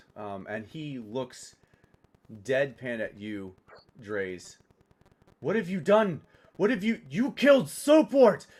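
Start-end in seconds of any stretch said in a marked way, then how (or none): 5.3-8.3 frantic, high, loud panicked freaking-out outburst. A game master voicing a character who turns on Draze, freaking out. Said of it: "he begins freaking out".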